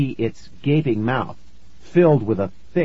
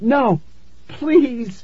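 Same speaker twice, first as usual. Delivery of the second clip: pleading, begging in a very high voice; 13 semitones higher than usual. Narrator reads their own line, facing a man and a hungry cockroach: begging. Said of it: "I begged".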